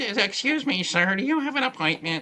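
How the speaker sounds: high, fussy put-on receptionist-style voice. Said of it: "I'm trying to put on my Lily Tomlin voice".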